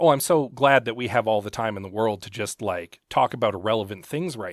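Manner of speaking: ordinary talk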